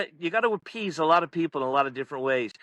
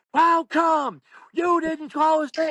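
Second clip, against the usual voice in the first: very high-pitched, shrill, loud protesting scream; 11 semitones higher, 5 dB louder than usual. Retelling how parents in the front row protest a call: imitating parents screaming. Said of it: "they're screaming".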